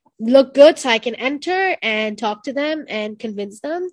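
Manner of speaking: ordinary talk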